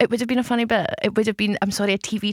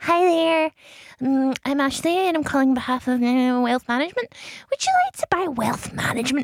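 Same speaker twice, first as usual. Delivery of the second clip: put-on childish, young-sounding, high baby voice, Glasgow accent; 5 semitones higher than usual. Retelling their old wealth management sales calls, in a baby Glasgow voice. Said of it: "Baby Glasgow voice".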